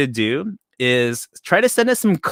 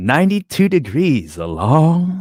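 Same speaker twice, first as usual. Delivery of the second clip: slow, smooth smooth-jazz radio host voice. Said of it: "With your radio voice?".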